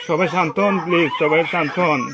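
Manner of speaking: loud pleading voice.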